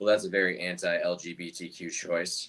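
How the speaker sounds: muttering aside, half to himself. Retelling what a man at a wine bar said: imitating someone muttering under breath. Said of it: "the guy under his breath".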